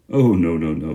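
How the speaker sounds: scandalised, shocked, protesting tone. Reading a story aloud, an uncle answers a question: shocked voice. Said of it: "said Uncle Andrew in a shocked voice".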